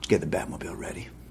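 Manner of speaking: low, soft, fast mutter. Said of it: "They just talk in a low register".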